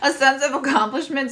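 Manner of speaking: high, giggly delivery, giggling through the words. Speaker giggles at a comment while repeating a phrase, giggling. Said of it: "I'm giggling at one of the comments".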